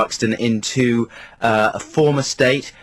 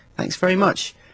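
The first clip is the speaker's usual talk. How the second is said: mock condescending, sweetly polite, pitched-up patronizing tone; 7 semitones higher than usual. Retelling thanking someone he didn't recognise: imitating own patronizing smiley tone. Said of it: "smiley in a patronizing way and saying".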